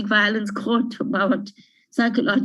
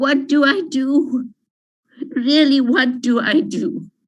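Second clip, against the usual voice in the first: slow, upset, emotional voice; 4 semitones higher than usual. Speaker telling listeners no organization could help: emotional, upset. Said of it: "I'm sorry for becoming so emotional".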